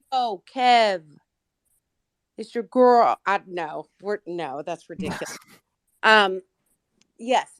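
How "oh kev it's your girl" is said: loud, put-on New York accent. Told to talk in a New York accent while Kev isn't paying attention: New York accent. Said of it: "in a New York accent".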